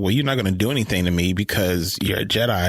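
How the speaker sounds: plain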